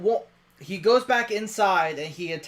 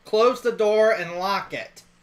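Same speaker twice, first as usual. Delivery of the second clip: ordinary delivery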